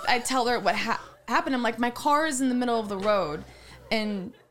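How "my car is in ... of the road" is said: normal talking voice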